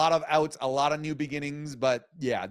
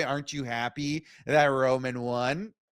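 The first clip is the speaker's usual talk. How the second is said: normal talking voice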